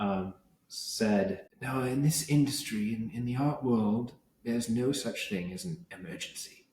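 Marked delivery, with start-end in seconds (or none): 1.6-6.6 put-on droll, laconic, very quiet English accent. Recalling what an old man in the art world told the speaker, laconic droll english accent. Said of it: "in this very laconic, droll, like, uh, English accent too".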